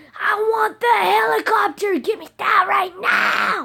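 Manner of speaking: put-on very high, very loud, shrill bratty raging like a kid. Retelling a voice heard on the game mic, imitating a raging kid. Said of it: "It sounded like a kid raging on Xbox".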